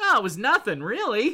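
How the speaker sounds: play-acted aw-shucks humility, modest and offhand. Retelling a comic scene, imitating Molecule Man's modesty. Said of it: "he's just standing there going".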